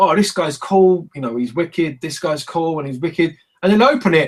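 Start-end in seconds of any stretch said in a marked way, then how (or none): none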